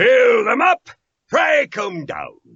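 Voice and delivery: loud raspy mock voice. Voice actor, asked about his Overwatch role, performs the loud, raspy Torbjorn voice. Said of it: "He's he's loud and raspy".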